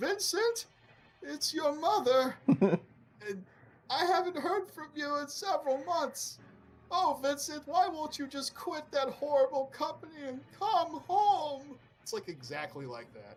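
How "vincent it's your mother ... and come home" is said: put-on very high old lady voice. Describing a game, voicing vincent's mother calling him: stereotypical old lady voice. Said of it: "it's like the stereotypical old lady voice".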